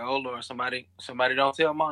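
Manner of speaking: normal talking voice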